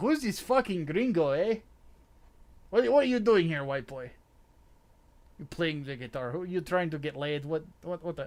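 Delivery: put-on loud accent drifting into Russian. Imitating locals reacting to a guitar-playing outsider, in an accidental russian accent. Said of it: "why did my accent just become Russian?".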